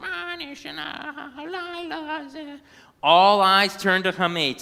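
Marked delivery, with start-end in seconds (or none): 0.0-2.6 very high, soft squeaky parrot voice, words drawn out. Narrator reading a story where the pet parrot repeats the narrator's words: squeaky Hametz parrot voice. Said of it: "repeated in a squeaky parrot voice".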